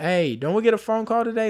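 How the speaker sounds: mock, high, rising hollered voice. Retelling how someone asked about getting a phone call: imitating someone yelling.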